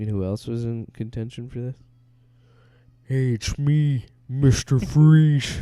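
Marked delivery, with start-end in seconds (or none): 3.0-5.6 very loud, very slow, high-pitched bellow. Imagining another actor in contention as Mister Freeze: Jesse the Body Ventura voice. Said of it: "you know what another voice I should pull out?".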